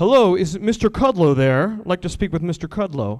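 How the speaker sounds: loud, put-on, big beefed-up burly voice. Recalling phoning a workplace as a kid, putting on a burly voice. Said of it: "I would have to put on my burliest voice".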